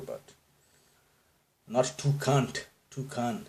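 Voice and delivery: a light touch of Indian accent on toucan. Correcting a pronunciation of toucan, the speaker is slipping into Indian accent. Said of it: "gave a little taste of my Indian accent".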